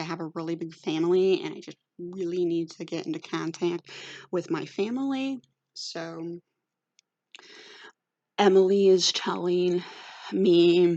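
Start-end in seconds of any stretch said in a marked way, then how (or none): none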